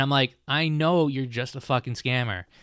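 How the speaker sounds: ordinary talk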